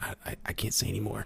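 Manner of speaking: put-on whisper. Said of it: "why are you whispering?".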